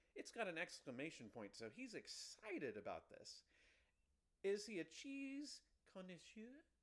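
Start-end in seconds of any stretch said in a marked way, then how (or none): 4.5-6.7 very high, fake put-on French accent. Wondering aloud about a dating profile's tagline, in a fake french accent. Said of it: "I like how you just used a fake accent".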